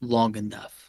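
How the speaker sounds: whispered voice. Voicing a reply heard in a character's ear: whispering in someone's ear. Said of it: "You hear a whisper in your ear".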